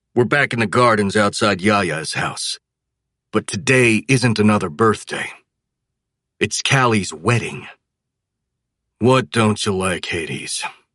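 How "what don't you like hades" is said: muttered with total boredom. Narrator at Callie's wedding asks Hades what he doesn't like; bored mutter. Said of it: "I mutter in a bored tone".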